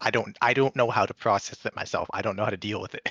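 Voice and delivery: ordinary delivery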